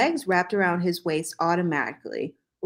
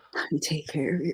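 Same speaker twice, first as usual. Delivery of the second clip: whispered, quieter; 3 semitones lower, 5 dB quieter than usual. Reading a romance story aloud, a character's line: whispering. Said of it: "he whispered".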